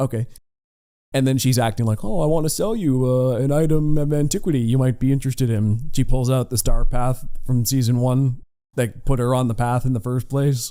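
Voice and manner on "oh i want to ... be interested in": play-acted coy, demure voice. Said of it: "she's kinda playing coy at first".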